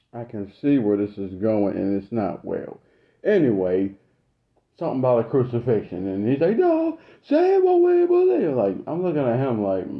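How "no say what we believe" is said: put-on old man's shout, very high, drawn out. Recounting what an older man kept yelling at him, imitating someone yelling. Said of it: "why are you yelling?".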